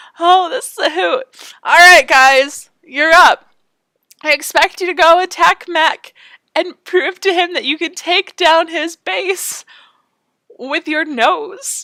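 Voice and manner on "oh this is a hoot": giggly, laughter breaking up the words. Reacting to a stunt just done, laughing while talking. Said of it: "I can't stop laughing".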